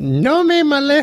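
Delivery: high, wide-ranging monkey squeak with Spanish accent.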